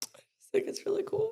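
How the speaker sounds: choked-up, teary talk through tears, very high. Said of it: "I can't stop crying".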